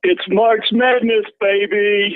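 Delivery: very high, drawn-out put-on baby voice. Doing a March Madness line as a Dickie V impression. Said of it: "that's my impersonation".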